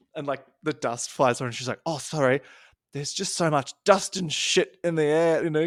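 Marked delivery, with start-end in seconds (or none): 1.9-5.5 put-on New Zealand accent with Kiwi vowels. Retelling what a performer said in a bit: imitating a kiwi accent. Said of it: "Kiwi accent".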